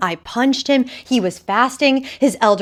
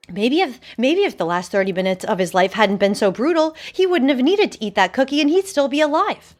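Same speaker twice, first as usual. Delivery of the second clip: usual speaking voice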